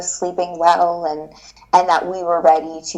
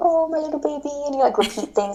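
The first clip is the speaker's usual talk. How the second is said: put-on little, high, cooing baby-talk voice; 9 semitones higher, 4 dB quieter than usual. Showing how one talks to the baby at home: baby talk voice. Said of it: "'cause you do the baby talk".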